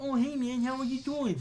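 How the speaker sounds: put-on nasally voice. Retelling running into this guy at the mall, imitating his nasal speech. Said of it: "Like it was very nasally".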